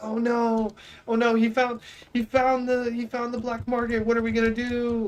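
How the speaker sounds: put-on frantic, alarmed, freaking-out group chatter. Retelling how other players reacted on finding him: imitating panicked players. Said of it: "the whole server starts freaking out".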